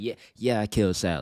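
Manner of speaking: very loud, put-on gleeful voice. Acting out imagined final words before execution: put-on smiling delivery. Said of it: "with the biggest smile on my face".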